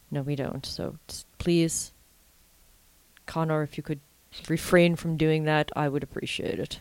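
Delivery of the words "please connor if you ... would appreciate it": fake solemn, earnest, put-on serious voice. Talking to connor in a put-on serious voice. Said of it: "It was just the voice I decided to speak in. ... If I talk in a serious voice, maybe he'll listen".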